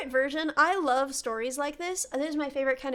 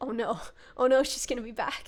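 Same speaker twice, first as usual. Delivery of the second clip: acted terrified child voice; 3 semitones lower than usual. Telling a story about a boy scared to go to bed, acting a terrified kid. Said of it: "he's terrified to go to bed".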